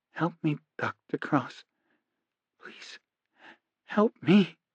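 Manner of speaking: hushed, soft, strangled and choked whisper. Reading a story, Gary speaks to Doctor Cross in a soft, choked whisper. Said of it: "whispered in a soft, choked voice".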